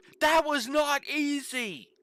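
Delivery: mock, very high, drawn-out furious angry yell. Imagining a character yelling in a moment of anger: imitating someone yelling in anger. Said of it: "Shauna yells out".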